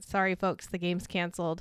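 ordinary talk

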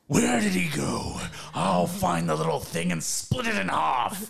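harsh, creaky, rough, loud orc monster voice. The game master voices an orc in the scene, orc voice. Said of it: "You hear the orc say".

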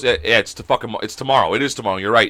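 normal talking voice

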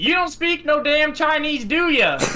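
put-on strong, thick Southern accent, very high-pitched. Retelling what a man called from his garage when you arrived, thick Southern accent. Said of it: "like in this thick Southern accent".

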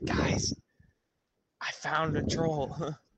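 carrying, loud, drawn-out stage whisper-yell. Player's character calls into a cave to the rest of the group, whisper-yelling. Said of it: "whisper yell into the cave".

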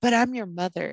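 mock mother voice, pleading and laying on guilt. Retelling mom's favorite line to pry: imitating mom guilt-tripping. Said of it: "kinda guilt trip me into telling her".

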